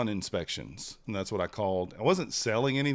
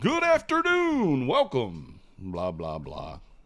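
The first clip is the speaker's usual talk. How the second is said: very slow, sing-song little radio voice; 3 semitones higher, 4 dB louder than usual. Recalling how they answered the phone at a sales job, in a little radio voice. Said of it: "I used to have a little radio voice".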